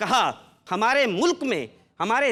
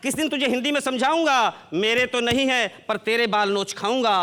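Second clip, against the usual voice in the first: ordinary talk, nothing marked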